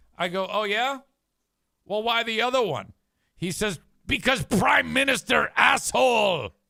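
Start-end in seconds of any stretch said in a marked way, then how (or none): 4.1-6.5 loud, thick put-on Czech accent. Speaker retelling a man's answer about the country's name: imitating a thick accent. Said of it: "he speaks with a very uh, thick accent".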